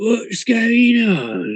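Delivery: crude, very high, swooping newborn orc mutter. Game narrator voices an orc crawling out of the dirt: muttering newborn orc. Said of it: "It sort of mutters in rudimentary, uh, in rudimentary speech".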